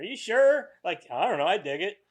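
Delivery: play-acted laid-back, passive, noncommittal delivery. Imitating Jeremiah in a passive conversation: imitating Jeremiah, passive. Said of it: "Very passive conversation".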